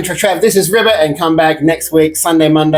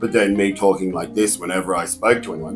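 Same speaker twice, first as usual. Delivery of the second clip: very deep, soft, dropped low-register voice; 8 semitones lower, 8 dB quieter than usual. Describing how he talked in his scenes, demonstrating it: talking in a lower register. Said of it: "he was talking in a lower register".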